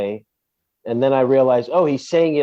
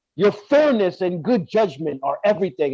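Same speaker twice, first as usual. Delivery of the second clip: mock fawning manner delivered angrily, pitched up; 6 semitones higher than usual. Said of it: "he says it angrily".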